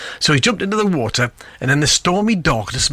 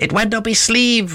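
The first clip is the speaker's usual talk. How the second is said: high, squawking parrot voice; 8 semitones higher than usual. Narrating a story where a parrot squawks during a magic routine, parrot impression. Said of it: "Parrot impression".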